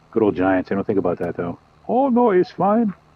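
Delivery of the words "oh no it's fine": high, slow, really bad mock German accent. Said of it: "I did a really bad German accent".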